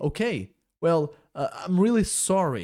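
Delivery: hesitant, halting, slow stammer, tripping over words. Explaining English, the speaker voices a character's reply in an example dialogue, stammering. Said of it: "Gaguejando aqui também".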